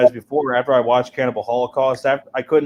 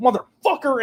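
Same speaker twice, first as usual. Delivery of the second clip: put-on sudden furious outburst, pitched up; 11 semitones higher than usual. Speaker recalls Rob's first reaction to her rant, imitating Rob's angry outburst. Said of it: "and he's punching boxes".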